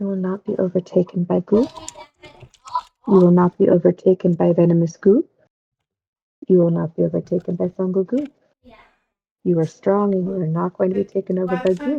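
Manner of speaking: whispered voice. Voicing a character who talks to each ornament: whispering to the ornaments. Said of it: "by just whispering to each one".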